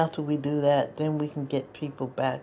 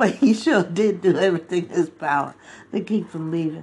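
loud speech mixed with laughter; 3 semitones higher, 5 dB louder than usual. Having apologized for laughing, the speaker carries on, laughing while talking. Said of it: "I'm sorry I'm laughing".

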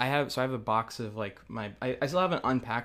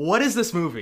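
put-on yelling, higher and louder; 7 semitones higher, 8 dB louder than usual. Retelling reactions from an earlier episode: retelling own screaming. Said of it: "I'm just continually screaming".

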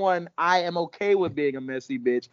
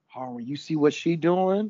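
gossipy, nosy, dishing like juicy gossip. Retelling the queen's entrance, doing Larys gossiping. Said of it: "And Larys is like".

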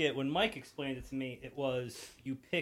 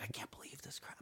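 imitated whisper, quieter; 18 dB quieter than usual.

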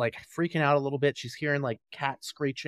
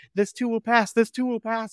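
play-acted, very high, loud, frantic panic, repeated words; 10 semitones higher, 5 dB louder than usual. Retelling a film scene where a character panics: imitating someone freaking out. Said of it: "she starts freaking out".

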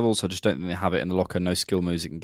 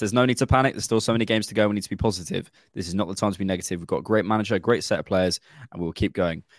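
ordinary talk

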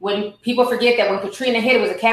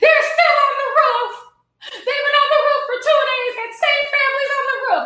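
put-on tearful voice, higher pitch. Retelling a call to her husband at work, imitating own past crying. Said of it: "calling my husband at work and crying".

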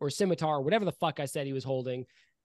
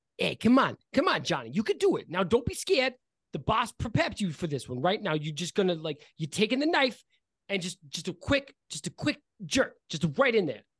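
encouraging character voice, higher pitch; 4 semitones higher than usual. Voicing a Kenku hyping up a shaking Kenku with a dagger: Kenku hyping up a comrade. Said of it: "And one of them says".

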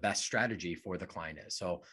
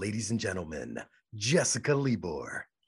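stage-announcer voice, voiceover style. Asked for a taste of their voiceover voice, introducing a podcast: voiceover announcer voice. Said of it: "give like people just like a taste of it".

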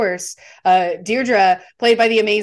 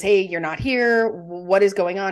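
usual speaking voice

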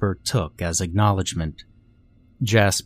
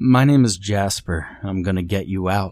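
plain

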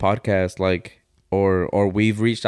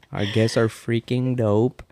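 put-on girlish, girly-sounding delivery; 2 semitones higher than usual. Repeating own earlier line to mock it: imitating own girlish delivery. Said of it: "You sounded like a girl".

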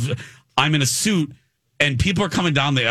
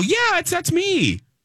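put-on very high, bouncy, bubbly chirp. Retelling how he answered a woman asking if he was [name]: retelling bubbly Tigger-like voice. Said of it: "And I'm all like bubbly and I'm like Tigger".

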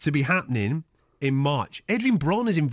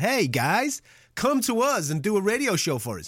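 poor put-on American accent, pitched up; 6 semitones higher than usual. Podcast host quotes radio bosses inviting them to do a show, crap American accent. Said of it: "I've done that crap accent".

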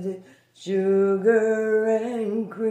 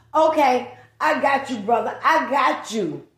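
put-on fed-up, indignant middle-aged mom voice; 3 semitones higher, 4 dB louder than usual. Performer voicing a middle-aged mom with a disobedient son, middle-aged mom voice. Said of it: "She's a middle-aged mom who has a disobedient son".

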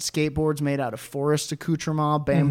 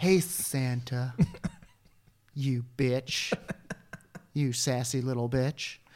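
seductive voice, much quieter; 2 semitones lower, 7 dB quieter than usual. Playing sexy Jesus Christ beneath the mask, addressing Santa, seductive. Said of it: "Begins to seduce Santa".

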